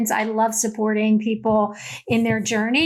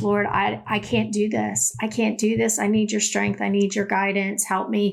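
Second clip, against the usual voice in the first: put-on begging, pleading voice. Retelling praying on knees in the night: retelling own begging prayer. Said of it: "just begging the Lord".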